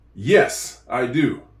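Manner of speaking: brief pause right after "yes". Showing a learner how the answer sounds: short pause after yes. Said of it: "You can hear the pause after the yes".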